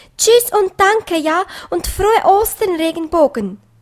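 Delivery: excited, high, calling voice. Pieps, leaving the rainbow, calling up to the sky. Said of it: "rief er zum Himmel hinauf".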